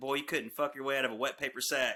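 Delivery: plain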